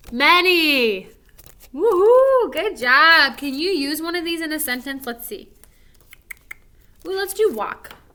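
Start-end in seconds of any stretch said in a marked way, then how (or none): 0.1-1.0 loud, drawn-out final word "many". Reading the sight words again with the class: loud. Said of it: "by many, you should be pretty loud".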